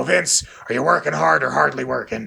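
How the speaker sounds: rough, raspy, creaky, smoke-worn smoker's voice. Describing a cheap former boss, the speaker shows how he always talked: impression of his former boss. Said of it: "he talked like this all".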